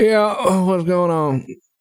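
groggy, half-awake, barely awake voice. Voicing a character who was just woken by a phone call: groggy, just woken up. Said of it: "trying to wake up".

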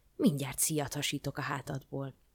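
ordinary delivery, nothing marked

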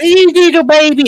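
very high, motherly mom register. Retelling talking to his dogs, in his mom's voice register. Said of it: "my mom's voice is somewhere in that register".

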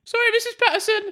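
very high, squeaky chavvy falsetto. Trying out a pathetic voice for Smee: chavvy falsetto Kevin voice. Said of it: "like Kevin from Kevin and Mary".

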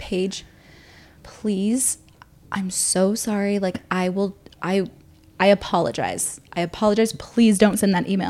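put-on calm, quiet tone. Retelling how a man begged her not to send an email; imitating him going quiet and calm. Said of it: "he just got real quiet real calm and he's like".

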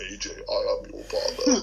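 deep, low, swooping, looming villain voice. Addressing AJ on the show, in a Darth Vader voice. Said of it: "my Darth Vader voice saying".

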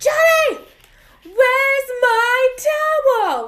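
very high, drawn-out, slow, dramatic yell. Recapping a scene where Moira yells at Johnny from the shower, mock Moira dramatic yell. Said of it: "immediately yells at Johnny".

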